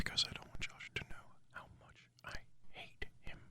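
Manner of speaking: close-mic, very soft hushed whisper. Leaning close to the mic to explain the secret: whispering. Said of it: "we're whispering".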